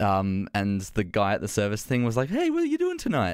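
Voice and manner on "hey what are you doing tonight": very high-pitched, perky, chirpy voice, acted out. Retelling a service attendant's greeting: imitating a really chirpy attendant. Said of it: "Like, really chirpy".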